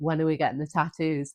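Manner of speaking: normal talking voice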